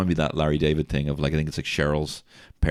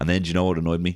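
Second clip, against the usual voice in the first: ordinary talk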